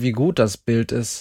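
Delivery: ordinary delivery, nothing marked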